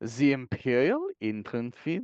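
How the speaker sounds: imitated German accent. Retrying a hard game term after being asked to: German accent. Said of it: "it's not any easier with a German accent".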